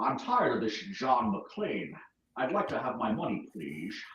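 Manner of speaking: Scottish-accented speech. Discussing Sean Connery playing that part, the speaker does a Sean Connery impression. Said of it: "Sean Connery would be, would be more like".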